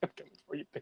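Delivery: whispered, muttered mumble under the breath. Voicing a character who mutters a threat at the sky: mumbled to himself. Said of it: "he just mumbles it to himself".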